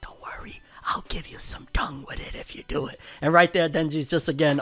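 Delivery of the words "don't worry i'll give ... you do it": very soft, breathy whisper, very close. Retelling an anime scene where a character speaks into someone's ear: imitating a whisper. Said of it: "And she whispers in his ear".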